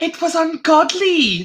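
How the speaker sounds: high put-on Welsh accent. Asked to redo an impression from a story about meeting someone: welsh accent. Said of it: "that's about all I can say in a Welsh accent".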